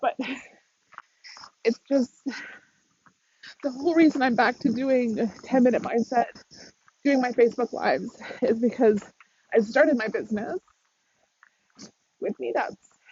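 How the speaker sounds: tearful with a breaking voice. Speaking on a facebook live, the host keeps talking while crying, voice breaking. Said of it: "I'm crying on a Facebook Live".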